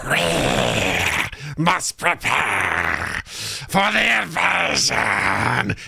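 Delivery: very slow, drawn-out, hissing alien queen voice. Voicing an alien-like creature queen rallying the gremlins: hissing alien queen voice. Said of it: "it's just hissing and saying".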